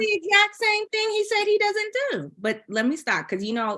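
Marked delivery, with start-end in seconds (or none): 0.0-2.3 very high-pitched, upset, worked-up voice. Discussing an episode, criticizing a man who lied about his tactics, upset, voice rising higher. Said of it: "I can hear my voice going higher".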